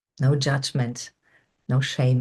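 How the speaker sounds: ordinary delivery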